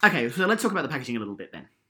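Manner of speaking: rattled off at top speed. A host moves on to the next topic, speaking very fast. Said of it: "I said that very fast".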